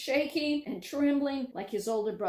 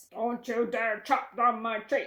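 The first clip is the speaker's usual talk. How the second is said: rough, gruff fairy-tale troll voice; 3 dB louder than usual. Narrating a folk tale, the troll speaks to the youngest son, gruff troll voice. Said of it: "he heard the ugly troll's gruff voice".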